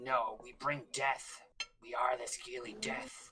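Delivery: fierce, growling warrior voice. Voicing a Scaly Death Tribe member to the players, the speaker growls. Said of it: "He kind of like growls at you".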